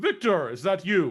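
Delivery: big, loud, resounding, booming voice. Game master voices a figure calling to a player character as the group approaches, booming voice. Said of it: "you hear a booming voice".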